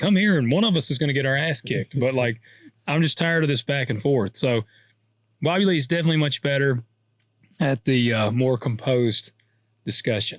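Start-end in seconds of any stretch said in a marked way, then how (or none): 0.0-2.0 frustrated, fed-up, mad, done-talking tone. Retelling finally getting mad at an online arguer: retelling an angry reply. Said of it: "I finally just got mad".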